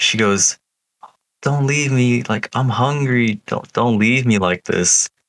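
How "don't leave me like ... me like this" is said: put-on old lady crying, higher. Retelling a story, speaker voices the lady behind the wall, imitating an old lady crying. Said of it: "This old ass lady crying".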